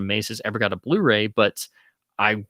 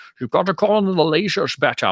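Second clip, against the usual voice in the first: clumsy put-on Scottish accent, pitched up; 8 semitones higher, 4 dB louder than usual. Recalling childhood games, the speaker quotes what he used to say: bad Connery impression. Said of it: "my uh, you know bad Connery impression".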